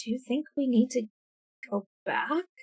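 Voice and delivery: low-key, quiet, hushed voice. Speaker re-enacts a woman's line, in a hushed voice. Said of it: "say the the needing to go back in like a hushed voice".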